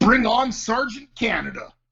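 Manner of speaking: top-of-the-lungs shrill shriek, very high. Retelling a brother yelling in a dark movie theater: imitating someone screaming. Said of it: "screams, like, top of his lungs".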